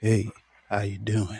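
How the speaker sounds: very quiet, low, smooth, hushed sultry voice. Called to the stage as the man with the sultry voice: sultry voice. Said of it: "the man with the sultry voice ... I know I don't do it like Charlie".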